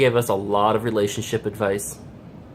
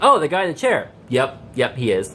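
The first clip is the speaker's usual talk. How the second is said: ordinary delivery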